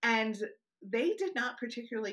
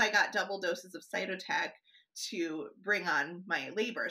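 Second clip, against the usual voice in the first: plain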